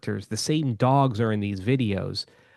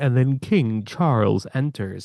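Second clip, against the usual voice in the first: computer-generated, AI-style narration voice; 3 dB louder than usual. Describing a dog video, the speaker imitates its AI narrator voice. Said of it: "that A I voice will be like".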